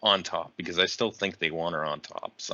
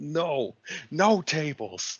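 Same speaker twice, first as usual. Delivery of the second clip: mock yell, raised and pitched up; 9 semitones higher than usual. Retelling a wrestler at the commentary desk: imitating a yell.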